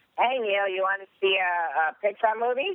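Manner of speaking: very high, comic character voice, going way up. Asked for a quick PG impersonation, the speaker does a Mr. Chow impersonation. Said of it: "can you do me an impersonation of Mr".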